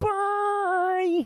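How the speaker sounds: put-on frog puppet voice. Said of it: "I'll just be like".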